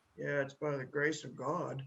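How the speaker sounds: hushed mutter under the breath, quiet. Retelling a graduate's reply to the speaker's greeting, imitating muttering under breath. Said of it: "he goes under his breath".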